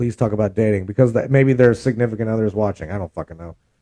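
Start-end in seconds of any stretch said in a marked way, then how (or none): 0.0-0.9 mock whispering, lower and quieter. Imitating a viewer whispering a request: imitating a whisper. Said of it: "they were wanting to whisper it in my ear".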